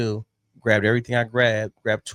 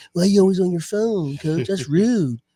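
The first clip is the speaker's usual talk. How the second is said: put-on annoyed, complaining voice, higher-pitched; 8 semitones higher than usual. Imitating the audience complaining about being on the phone: impression of an annoyed viewer. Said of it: "that was a great impression of".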